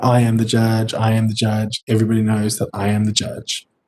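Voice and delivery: plain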